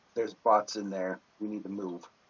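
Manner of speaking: barely audible, flat half-whisper, as quiet as possible. Warning a companion in character after slipping out past robots: half-whispering as quietly as possible. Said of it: "I'm going to whisper as quietly as I can".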